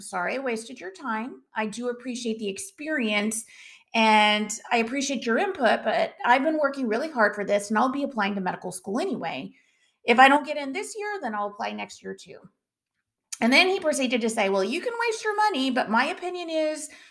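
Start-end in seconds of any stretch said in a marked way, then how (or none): none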